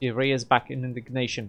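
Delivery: ordinary delivery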